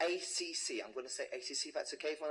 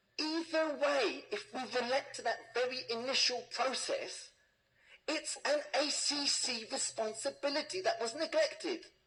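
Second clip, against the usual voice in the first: shouted straight out, insistent, loud, high-pitched; 9 semitones higher, 5 dB louder than usual. Arguing before a public gallery about a neglected tenant responsibility, shouting. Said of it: "I'm shouting".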